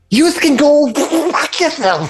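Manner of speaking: kobold screeching, shrill and very high yell. Voicing enemies in a tabletop game who curse at a player in Draconic, yelling curses. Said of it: "they're just yelling at you".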